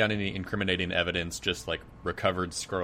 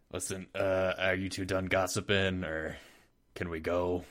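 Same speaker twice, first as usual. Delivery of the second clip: gravelly, put-on voice. Speaking in character, asking if the other two are done gossiping: gravelly character voice. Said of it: "doing a gravelly voice".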